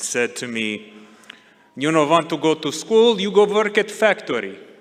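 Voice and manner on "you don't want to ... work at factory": put-on heavy, thick Croatian accent in English. Retelling the father's words when told he skipped school: imitating thick Croatian accent. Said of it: "in his thick Croatian accent".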